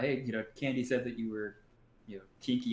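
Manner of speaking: ordinary talk, nothing marked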